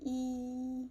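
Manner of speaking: high, long, level tone on E. Teaching tones, high long flat tone on E. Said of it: "E is high and long and flat".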